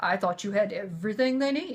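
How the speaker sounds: sarcastic, jabbing tone. Retelling own reply to his demand for the children's pants: imitating own sarcastic reply. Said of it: "replying sarcastically".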